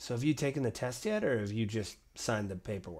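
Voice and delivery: soft hushed half-whisper, very quiet. Voicing a character asking another about the test: half-whispering.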